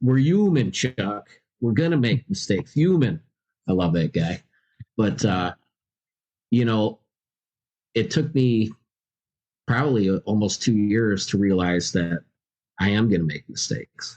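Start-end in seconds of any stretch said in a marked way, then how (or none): 0.0-3.2 put-on Bronx accent without h sounds. Quoting his sponsor's words to him, in a Bronx accent with dropped H's. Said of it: "he's got that Bronx accent".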